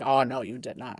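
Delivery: slow, indignant, offended, outraged cat voice. Retelling how the cat reacts to picked-up keys, voicing the indignant cat. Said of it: "she's like".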